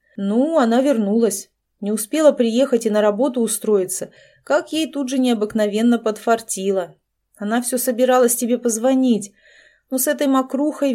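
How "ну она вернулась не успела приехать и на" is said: ordinary delivery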